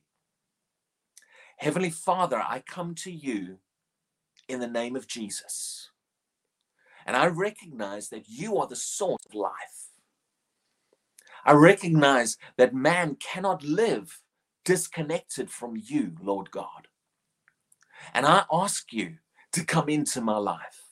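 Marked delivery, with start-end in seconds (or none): 1.6-20.8 said slowly with long pauses. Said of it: "I'll say them slowly".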